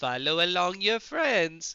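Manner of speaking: loud, high, terrible put-on Italian accent. Player casting a spell to pass a bonus-action message, in a terrible Italian accent. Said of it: "I'm saying this in a terrible Italian accent".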